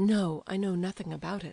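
dry, curt, abrupt tone. Nastasia answers Aglaya at their meeting, dryly and abruptly. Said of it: "dryly and abruptly".

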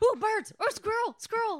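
very high, loud, chattering talking-dog voice. Imitating the dog from Up getting distracted: dog from Up voice. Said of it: "the dog from Up, where he's, like, talking".

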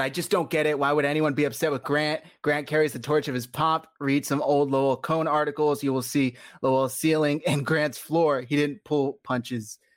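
normal talking voice

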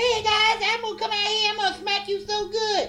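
very high, loud, squeezed-out helium voice. Mocking a wrestler's promo, imitating a throat-punched helium voice. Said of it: "permanently been punched in the throat and he's talking through helium".

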